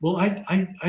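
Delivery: mock stammering. Retelling what an old lady said to the speaker: imitating a stammer. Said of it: "she started to stammer a little bit".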